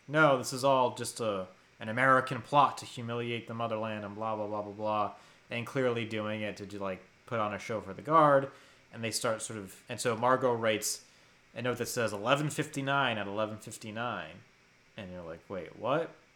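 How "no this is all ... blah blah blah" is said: plain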